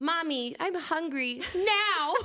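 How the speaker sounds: very high, eerie, creepy talking-doll voice. Recalling a talking doll that begged to be fed; Amazing Amy doll voice. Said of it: "scariest fucking voice ever".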